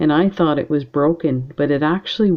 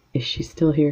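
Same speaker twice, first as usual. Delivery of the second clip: put-on whisper; 3 dB quieter than usual. Retelling a question to a student during a quiet massage: retelling a whisper. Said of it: "I kinda whispered to the student".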